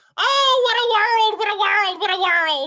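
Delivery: very high, loud, dying, melting wail of despair. Retelling a movie scene where a character melts: imitating a melting character's cry. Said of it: "when she melts and she's like".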